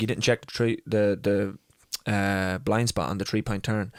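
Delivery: ordinary talk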